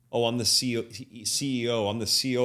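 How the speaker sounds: ordinary delivery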